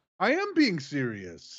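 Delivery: slow, earnest, insistent delivery. Insisting to the other speaker that he is serious: high-pitched voice. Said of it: "when you're talking like this".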